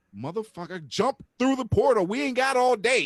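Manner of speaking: shrill, very high, loud screaming. Retelling screaming at the television at a character: retelling screaming at the tv. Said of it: "I'm screaming at the television like".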